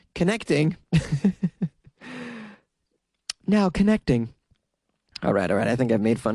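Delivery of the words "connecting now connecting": pitched-up automated dial-up computer voice. Mocking slow internet after asking about dial-up: imitating dial-up internet connecting. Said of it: "this is my impression of the Daytona Beach Police Department's internet".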